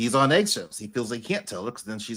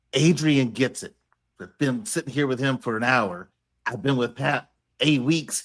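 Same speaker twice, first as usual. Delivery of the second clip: usual speaking voice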